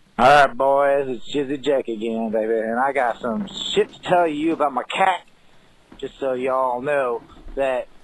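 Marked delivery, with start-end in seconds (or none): 0.2-5.2 accent from Jacksonville. Opening a call-in message to the hosts: Jacksonville accent. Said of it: "It's like a Jacksonville accent or something".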